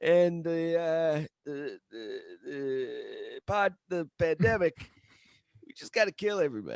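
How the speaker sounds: "the" said slowly, halting and stretched out. Imitating a speech at an inauguration: Joe Biden impression. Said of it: "What an impression".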